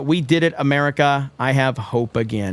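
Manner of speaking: ordinary talk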